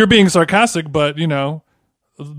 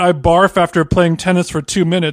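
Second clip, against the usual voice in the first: normal talking voice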